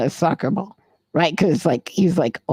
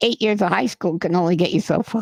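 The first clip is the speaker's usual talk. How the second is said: imitated mocking, teasing tone. Retelling what he said to a driver he was teasing: retelling his own mocking remark. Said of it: "So I'm making fun of him".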